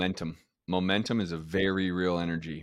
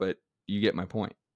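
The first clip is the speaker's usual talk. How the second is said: usual speaking voice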